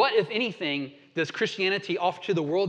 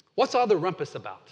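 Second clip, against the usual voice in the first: put-on British accent. Retelling a story, voicing C.S. Lewis questioning an arguing group, in good British voice. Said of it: "in a good British voice".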